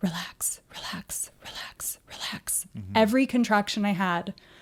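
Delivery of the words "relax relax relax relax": very slow, hushed whisper. Retelling what they whispered through contractions in labor, whispering. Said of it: "and I'm whispering".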